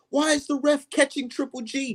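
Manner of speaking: put-on yelling. Retelling watching a fight on tv: retelling screaming at the tv. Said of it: "I'm screaming at the T V like".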